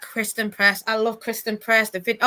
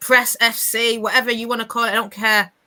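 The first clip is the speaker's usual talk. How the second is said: ordinary talk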